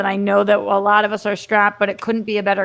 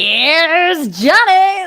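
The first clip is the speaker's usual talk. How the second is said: loud, high, first word stretched, wild presenter style; 8 semitones higher, 5 dB louder than usual. Showing how the famous movie line should sound: Jack Nicholson impression. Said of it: "it's more like".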